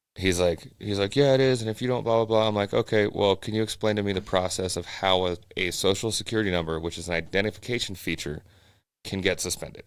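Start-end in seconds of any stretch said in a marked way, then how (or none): 1.2-2.5 put-on strong, quick, high-pitched Indian or Pakistani accent. Retelling a phone call with a suspicious man: Indian or Pakistani accent impression. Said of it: "super super Indian or Pakistani accent".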